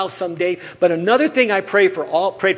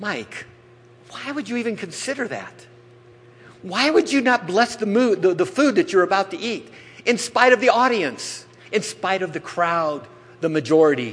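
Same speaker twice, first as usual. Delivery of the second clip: usual speaking voice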